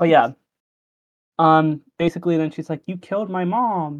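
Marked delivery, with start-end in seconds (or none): 2.9-4.0 delivered like really terrible acting. Quoting how a character delivers her line, imitating really bad acting. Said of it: "That's how she says it too".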